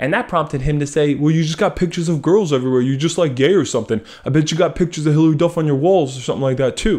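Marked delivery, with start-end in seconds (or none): 1.2-7.0 put-on male voice, deeper. Retelling what another guy said back to him, in a deeper voice. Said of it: "I'm making his voice deeper for some reason".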